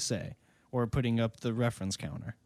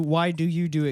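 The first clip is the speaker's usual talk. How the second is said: usual speaking voice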